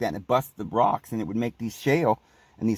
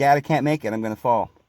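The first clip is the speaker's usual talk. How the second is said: terrified, scared voice, crying through tears. Retelling being stuck on a cliff, calling to dad: retelling a crying plea. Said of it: "And I'm crying and I'm saying".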